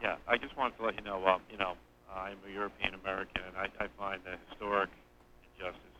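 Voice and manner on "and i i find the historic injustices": very soft, faint speech. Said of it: "Could you speak a little louder".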